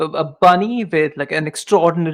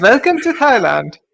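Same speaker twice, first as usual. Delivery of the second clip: put-on Indian accent, pitched up; 6 semitones higher, 4 dB louder than usual. Joking about the captions misreading Toyland: put-on Indian accent. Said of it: "Welcome to the Indian accent".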